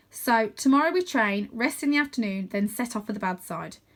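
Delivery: plain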